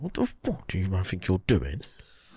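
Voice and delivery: deep, threatening, swooping angry voice. Retelling a voice note a guy sent: imitating a deep-voiced angry caller. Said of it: "deep voice".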